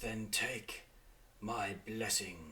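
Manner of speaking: soft, close, intimate stage whisper. Voicing a being that half-whispers into a character's ear: half-whispering into the ear. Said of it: "It says".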